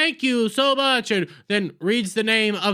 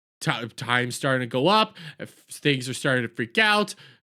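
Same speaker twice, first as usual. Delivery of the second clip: plain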